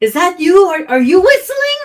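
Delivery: loud high-pitched yelling. A character calls toward the quiet front of the building, yelling in Giant. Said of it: "I'm going to yell out in giant".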